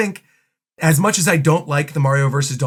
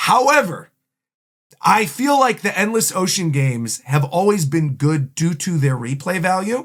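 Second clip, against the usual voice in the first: ordinary talk, nothing marked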